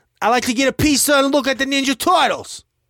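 very high, very loud put-on New York accent. Showing their best attempt at how New Yorkers speak, New York accent. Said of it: "this is my best New York accent".

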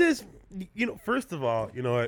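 ordinary talk

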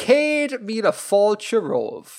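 overdone, hammed-up Irish accent, laid on thick, sing-song. After an apology, the speaker repeats an irish phrase for listeners: hammed-up irish accent. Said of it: "just to really ham up the Irishness".

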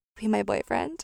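mock mumbling quietly under the breath. Retelling what a girl said into her elbow, in a mumble under her breath. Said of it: "she like mumbles like".

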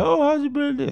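put-on drunken mumble, pitched way up. Retelling coming home drunk and greeting parents at the table, imitating a drunken mumble. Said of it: "just mumbling like".

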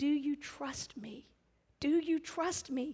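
gentle, soft, slow, unhurried voice. Retelling words heard in prayer: imitating a gentle voice. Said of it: "him very gently saying".

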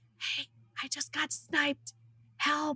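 imitated whisper. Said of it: "she was whispering".

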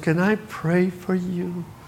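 soft, very slow, very gentle voice. Speaker, sick and lying down, retells their grandmother's visit, imitating grandma's gentle voice. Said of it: "Very gentle voice".

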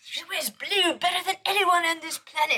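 very high put-on British accent, pitched way up. Retelling what a British woman said about the Queen: put-on British accent. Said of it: "I like your British accent".

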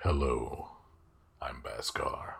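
deep, guttural, breathy dragon voice, soft and half-breathed. Playing Baskar, the yellow dragon, introducing himself in a deep guttural voice. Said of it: "Baskar also sounds deep guttural".

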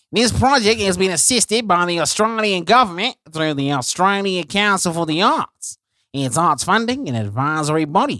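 loud, fake, put-on Australian accent. Reading an ad's funding sentence as the co-host asked: put-on Australian accent. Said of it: "say that last sentence in an Australian accent".

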